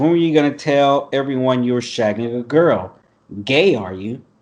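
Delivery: ordinary delivery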